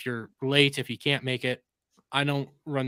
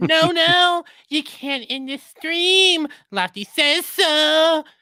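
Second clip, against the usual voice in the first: shrill, very high, loud, slow, drawn-out voice; 10 dB louder than usual. Reading a viewer's super chat aloud: Lofty voice. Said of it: "I need to get a better Lofty voice".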